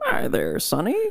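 put-on elderly man voice with a Southern accent. Put on the spot to go old man voice, Southern old man voice. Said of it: "go old man voice right now".

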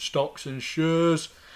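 broad Lancastrian accent. Speaker contrasts saying a phrase properly with saying it in a thick Lancastrian accent. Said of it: "in my thick Lancastrian accent".

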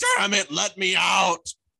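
put-on very loud, very high old-man scream. Acting out an inner old person banging a walker: imitating an old man screaming. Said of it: "screaming and trying to get out".

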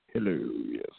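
very low, soft, lifeless mock-bored announcer drone. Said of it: "you sound so excited; you were just like".

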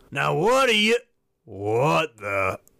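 put-on slurred, irritated, annoyed speech. Narrator voicing Larry as he whips his head around, slurred, annoyed. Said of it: "Larry slurred, annoyed".

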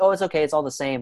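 plain

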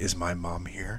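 very quiet, hushed, slow and creepy. Retelling a child standing by the bed at night: imitating a creepy question. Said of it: "It was creepy".

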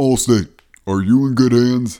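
loud, booming voice like a commercial announcer. Attempting an impression people ask for: Allstate guy impression. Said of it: "I'm gonna do the Allstate guy impression".

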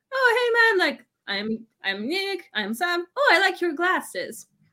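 sweet, all-nice tone. Retelling how the professor came over being all nice: imitating Nick being all nice. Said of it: "and he's all nice".

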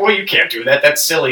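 acted scoff. Retelling how a man scoffed at a boy pouring water into sand: mock scoffing. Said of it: "scoffed at him".

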